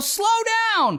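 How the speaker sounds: play-acted, high-pitched yell. Retelling a teen girl yelling at a driver who nearly hit their car, retelling a yell. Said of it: "the teen girl yells out the window".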